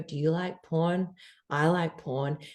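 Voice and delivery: deepest possible, almost put-on very deep bass voice. Retelling what a guy would say for twenty minutes, imitating a very deep voice. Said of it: "I'm talking the deepest voice".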